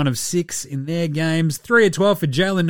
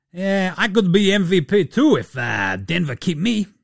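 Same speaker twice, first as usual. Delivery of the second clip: slow, wandering, inconsistent put-on Bosnian accent; 2 semitones higher than usual. Imitating a basketball player looking across at an opponent: Yusuf Nurkic accent impression. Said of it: "that accent went a couple of different ways".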